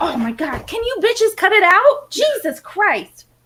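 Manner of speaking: very high, swooping, furious scolding. Breaking off mid-story to stop fighting cats: mad telling-off. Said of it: "I get really mad".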